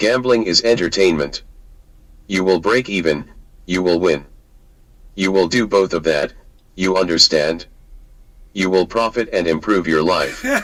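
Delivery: synthetic, machine-style robotic computer voice. Addressing listeners like a slot machine, in a computerized voice. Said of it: "I love hearing that from a computerized voice too".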